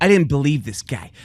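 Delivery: bragging put-on director voice. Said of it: "That's a good impression".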